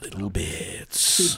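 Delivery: seductive, sultry whispered delivery. A host tries saying the rumor segment's name in a sultry whisper. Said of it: "Should I be whispering Little Bits?".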